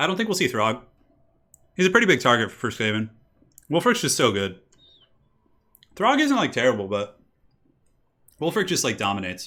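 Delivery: eating mid-sentence, mouth full. Talking to viewers about game picks, talking while eating. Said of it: "Sorry about the eating".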